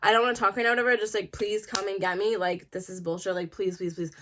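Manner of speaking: put-on pleading, begging tone. Retelling a call asking a friend for a ride: retelling own begging. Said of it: "I'm, like, begging her".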